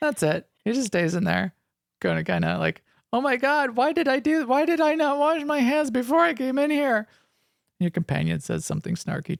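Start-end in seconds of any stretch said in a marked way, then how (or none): 3.1-7.1 high whimpering moan. Retelling a game character locked in a bathroom stall: imitating whimpering and moaning. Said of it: "whimpering and moaning".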